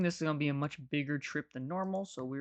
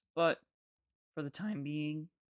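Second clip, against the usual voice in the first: cracked voice breaking mid-phrase. Planning the next step, the speaker's voice cracks mid-sentence; voice cracking. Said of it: "voice crack there".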